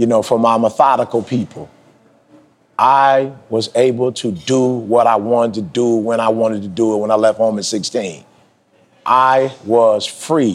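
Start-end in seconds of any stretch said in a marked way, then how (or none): 2.8-10.6 nice and slow, unhurried, careful, deliberate phrasing. Addressing listeners, saying it for the methodical people: nice and slow. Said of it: "I'm going to say this nice and slow".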